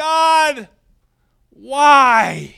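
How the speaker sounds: very high, very loud outcry, why stretched out. Telling a joke, a stuck, injured man looks up at heaven: crying out. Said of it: "he cries out".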